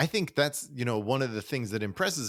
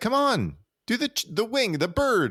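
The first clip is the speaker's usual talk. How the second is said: loud, high, swooping scolding yell; 12 semitones higher, 5 dB louder than usual. Retelling a movie scene where a waiter is yelled at: imitating Billy Crystal yelling. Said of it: "So Billy Crystal's yelling at him".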